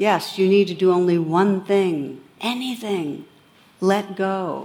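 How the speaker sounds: put-on booming deity voice. Telling a teaching story, voicing God's answer: booming God voice.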